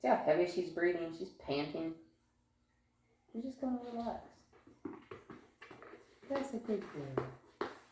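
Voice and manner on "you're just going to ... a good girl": gentle, soft, near-whispered tone. Verbally praising her for lying down, gentle near-whisper. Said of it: "I'm hardly whispering when I'm talking to her".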